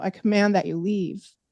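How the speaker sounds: normal talking voice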